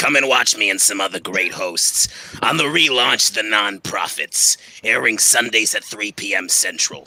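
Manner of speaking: put-on sixty-year-old smoker's voice. The speaker announces a voice, then delivers a promo in a sixty-year-old smoker voice. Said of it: "sixty year old smoker voice".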